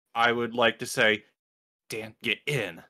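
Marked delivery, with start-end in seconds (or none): 1.8-2.7 very stern, low-toned, hushed voice. A player's character calls to dan before casting a spell, stern low tone. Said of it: "in a very stern, low tone".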